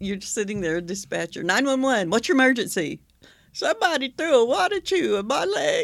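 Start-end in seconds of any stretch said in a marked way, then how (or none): 3.5-5.9 put-on dialect voice, much higher, slower. Playing a 911 caller talking to the dispatcher, imitating a dialect. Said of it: "this tone of voice and this dialect".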